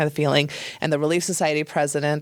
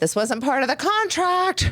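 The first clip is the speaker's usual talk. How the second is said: play-acted voice raised to carry, very high; 12 semitones higher than usual. Retelling a protest to people in another room: imitating a raised voice. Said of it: "I had raised my voice".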